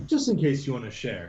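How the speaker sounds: normal talking voice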